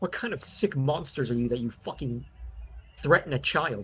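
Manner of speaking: furious, shrill, raging scream. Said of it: "he screams at you".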